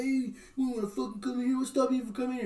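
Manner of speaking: mock frightened, nervous. Retelling a video, quoting a guy who opens a door: imitating a scared man. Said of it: "he's being all scared".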